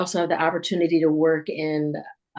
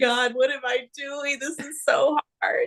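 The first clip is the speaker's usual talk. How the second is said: mock, very high, tearful crying voice; 9 semitones higher than usual. Retelling a weekly crying spell during hard studies: imitating own crying. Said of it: "I'm crying, going".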